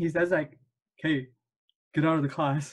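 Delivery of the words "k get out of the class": put-on strong, thick Arabic accent.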